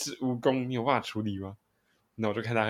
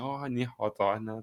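genial, amiable, slow, kindly tone; 4 dB quieter than usual. Imitating a roommate greeting people in person: imitating a kind, friendly greeting. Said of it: "和蔼可亲".

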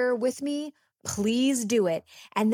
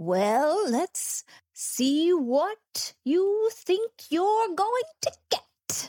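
pitched-up, very slow drawl, every word stretched; 8 semitones higher than usual. Asked to do a Mummy Cash impression for the others: Mummy Cash impression. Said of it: "your best Mummy Cash impression".

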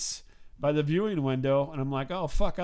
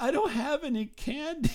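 put-on sobbing kid voice, higher; 11 semitones higher than usual. Retelling what a kid at the box office said: imitating a crying kid. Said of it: "He's crying".

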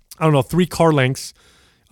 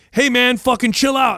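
loud yelling, pitched up; 7 semitones higher than usual. Retelling a driver swerving into them, shouting through the car window: retelling a yell. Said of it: "I'm yelling through my window like".

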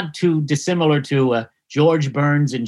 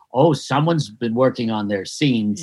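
mock under-breath mutter, lower pitch; 4 semitones lower than usual. Retelling what another performer said under his breath during scenes, imitating the muttering. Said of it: "under his breath he would say".

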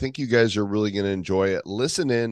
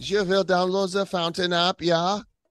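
put-on German accent, pitched higher; 9 semitones higher than usual. A podcast host, asked if he's German today, plugs the Fountain app: put-on German accent. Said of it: "Are you German today now?".

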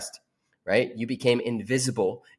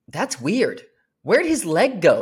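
very loud, high, swooping put-on child scream; 7 semitones higher, 5 dB louder than usual. Retelling what my son yelled about a man on crutches: imitating a kid screaming. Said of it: "he's like screaming it as loud as possible".

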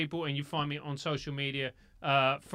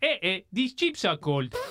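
Nigerian-accented English; 4 semitones higher, 4 dB louder than usual. Asked to sign off with one of his accents, he does a Nigerian accent. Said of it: "Let's go Nigeria".

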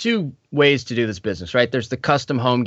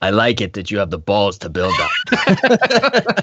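put-on slow, shouted, slight Russian accent. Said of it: "said it in a slightly more Russian accent".

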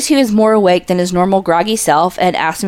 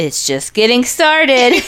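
higher-pitched text-to-speech voice, like a speech app; 5 semitones higher than usual. Co-host adding a spooky-season remark, in the TikTok text-to-speech voice. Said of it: "You sounded like the TikTok".

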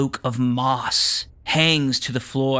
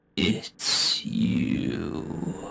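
rustling, crackling whispered creature voice like dry leaves; 7 semitones lower, 6 dB quieter than usual. A mossy creature speaks straight into the party's heads: crackling-leaves creature voice. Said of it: "a voice, like crackling leaves".

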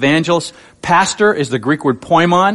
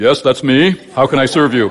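deep, put-on reverend voice; 4 semitones lower than usual. Answering a phone caller who asked for Reverend Jones, deepened voice. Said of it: "I had to deepen my voice and go".

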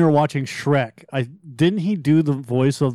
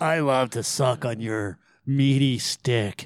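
put-on low gravelly voice, quieter; 3 semitones lower, 5 dB quieter than usual. Doing a requested voice for a dating-app message: Harvey Fierstein voice. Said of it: "do a Harvey Fierstein voice".

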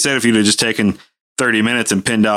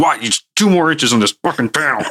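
put-on growl, higher pitch; 6 semitones higher than usual. Retelling cursing the engineers over an aircraft panel, retelling a growl.

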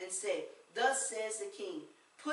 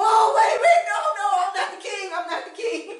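shrill, very high, very loud shrieking; 11 semitones higher, 18 dB louder than usual. Retelling a Bible story as attackers chase him: imitating someone screaming. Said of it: "he starts screaming".

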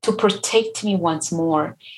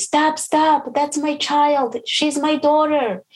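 mock, high, drawn-out scream; 8 semitones higher than usual. Retelling how a woman in a crowd protected her: imitating a woman screaming. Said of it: "this woman is just screaming and she say".

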